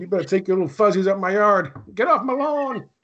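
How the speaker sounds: put-on high-pitched, grumpy, cranky old-man yell. Retelling chasing cats from the yard: imitating an old man yelling. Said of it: "I turned into the old man fighting, yelling at the cats".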